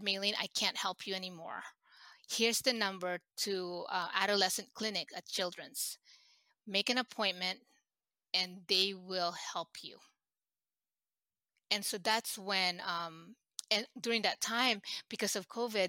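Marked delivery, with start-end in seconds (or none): none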